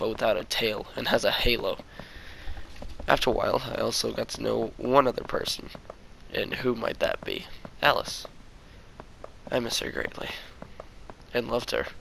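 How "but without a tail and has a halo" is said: usual speaking voice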